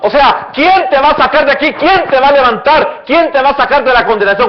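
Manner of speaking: high-pitched, loud, jeering, mocking taunt.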